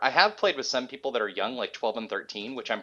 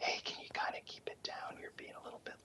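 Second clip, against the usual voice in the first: soft, hushed whisper, very quiet. Man quotes his wife asking him to keep it down at one in the morning, whispering. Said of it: "it's funny that she whispers it".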